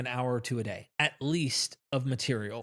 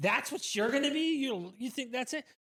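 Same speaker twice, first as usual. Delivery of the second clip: play-acted, very high scoffing laugh through the words; 10 semitones higher, 4 dB quieter than usual. Retelling a comedy bit where one man answers another, imitating laughing back mockingly. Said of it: "laughing back at him like".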